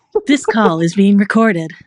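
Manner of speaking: loud, automated recorded-announcement voice on phone line. Speaker tries a voice for friends who think he could act: automated phone message voice. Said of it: "Should I be the new Siri?".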